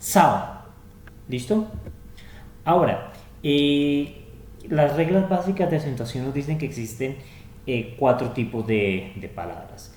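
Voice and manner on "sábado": first syllable sa of sábado hit hard, heavy stress. Explaining spanish word stress with an example: stress on sa of sábado. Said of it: "uno hace muchísimo más fuerza en sa de sábado".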